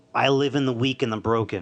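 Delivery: ordinary delivery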